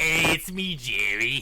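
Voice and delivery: put-on accent between Boston and New York. Playing a character after being asked for a Boston accent, in a Boston slash New York accent. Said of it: "Boston slash New York".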